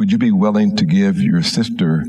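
ordinary delivery

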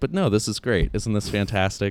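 almost sarcastic, ironic tone. Describing a theme of the speaker's darker jokes, imitating self sounding sarcastic. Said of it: "almost sarcastically going like".

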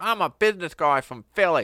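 put-on loud, convincing, full-on Australian accent. Retelling what Stan Thornton said on arrival: Stan Thornton Australian accent. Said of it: "that sounded like perfect Australian".

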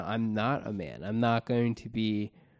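plain

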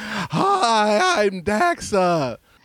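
acted, very high, earth-shattering shout, "hi" drawn long. Mimicking the other speaker's first introduction: imitating an earth-shattering greeting. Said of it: "not the earth-shattering".

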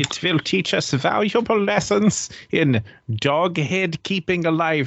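put-on German-accented scientist voice. Mid-conversation with others, one speaker breaks into a German accent. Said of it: "why are you doing a german accent".

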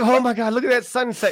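teary, weepy, sobbing voice, crying while talking. Mocking a stranger who starts crying mid-conversation, imitating someone crying. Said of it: "and starts crying and shit".

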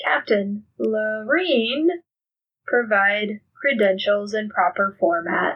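robotic automated computer announcement voice. Voicing a computer during a roleplay scene, in a computer voice. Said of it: "it kind of like that computer voice that like mangles names".

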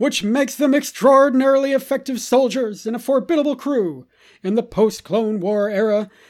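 dramatic narrator voice. Told to go ahead, the reader repeats the passage in Clone Wars narrator voice. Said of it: "Should we go Clone Wars voice".

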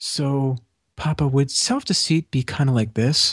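put-on very quiet, hushed voice. Retelling a daughter's question in a hushed room: imitating someone speaking very quietly. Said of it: "Really, really, really quietly".

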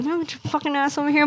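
mock goofy would-be tough shout, mild, playful. Retelling talking to a sister, imitating own attempt to yell. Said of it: "when I yell with this dumbass voice".

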